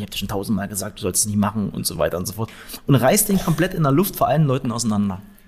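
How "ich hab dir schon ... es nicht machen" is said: ordinary delivery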